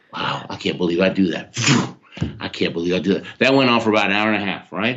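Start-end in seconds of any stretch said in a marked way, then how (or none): 0.2-3.3 acted whisper, lower. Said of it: "I whispered to myself".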